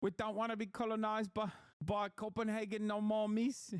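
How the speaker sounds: Maori-style New Zealand accent. Mimic a man asked about Trump buying Greenland, imitating a Maori-sounding accent. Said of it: "What the hell is this accent".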